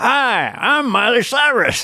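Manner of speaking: terrible, very high, badly drawn-out voice. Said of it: "Oh, that's terrible".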